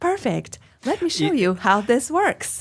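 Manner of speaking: high, unnatural robot voice like a chatbot. Imitating how some YouTube videos sound: imitating an unnatural robot voice. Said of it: "they sound to me like".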